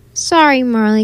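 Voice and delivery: plain reading voice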